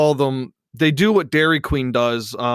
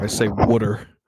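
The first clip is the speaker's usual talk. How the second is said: Philadelphia pronunciation of water; 3 semitones lower than usual. Speaker showing a friend how they pronounce water, Philly accent. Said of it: "In my Philly accent".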